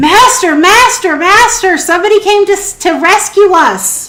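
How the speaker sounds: high, loud robot shouting. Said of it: "he starts shouting out and goes".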